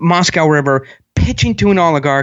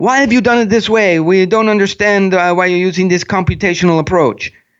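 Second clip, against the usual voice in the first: fluent English with a put-on Russian accent. Retelling a healthcare software deal, speaker quotes the man asking questions: Russian accent. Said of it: "with a Russian accent".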